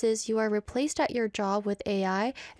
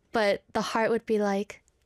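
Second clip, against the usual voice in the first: ordinary talk, nothing marked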